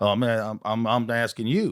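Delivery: put-on American Southern accent. Improvising a sketch as one of a couple of Southerners, Southern accent. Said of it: "Couple Southerners".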